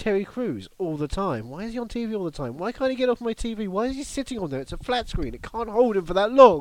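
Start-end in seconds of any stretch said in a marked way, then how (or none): 1.5-6.6 loud, pitched-up, exasperated and fed-up distressed rant. Complaining to a co-host about a man always on tv: mock distress. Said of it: "You sound very distressed".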